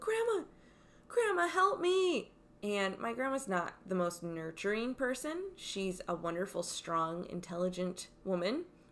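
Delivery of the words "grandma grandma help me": acted-out, very high, frightened, scared yell. Retelling being a child with a spider on the shirt: imitating a yell for help. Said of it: "I yelled".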